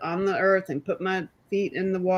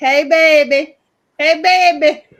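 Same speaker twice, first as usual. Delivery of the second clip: booming, loud, stretched-out, high-pitched call; 9 semitones higher, 11 dB louder than usual. Imitating a chat user's greeting: imitating Sergey Celery. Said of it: "He's like".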